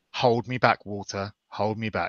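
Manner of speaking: low, close, private half-whisper. Leaning in to speak into Walter's ear, half-whispering. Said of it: "I kind of whisper in, whisper in Walter's ear".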